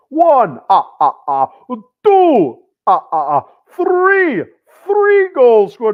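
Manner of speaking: each number drawn out with swooping pitch. Counting the goals scored like the Count from Sesame Street. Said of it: "like the Count from Sesame Street".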